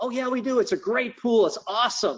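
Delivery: high, expressive, enthusiastic talking. In a training class, playing hotel staff answering a caller's question, ego expressive talking. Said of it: "That's like an ego expressive talking".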